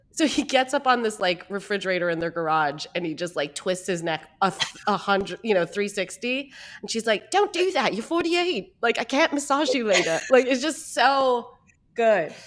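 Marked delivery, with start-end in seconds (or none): 7.3-10.1 terrible put-on New Zealand accent, pitched up. Retelling what she said as he twisted his neck, in a terrible New Zealand accent. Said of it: "I have a terrible New Zealand accent".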